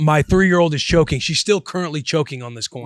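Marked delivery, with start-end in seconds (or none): none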